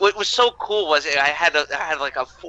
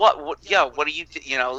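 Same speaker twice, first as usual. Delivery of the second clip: normal talking voice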